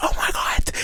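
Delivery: whispered scream, all breath. Retelling a reaction to a flying scene: imitating own screaming. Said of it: "I was screaming".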